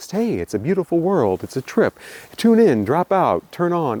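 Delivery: calm, relaxed put-on voice. Imitating Timothy Leary on an album track: calm relaxed Timothy Leary voice. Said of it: "sounding all calm and relaxed".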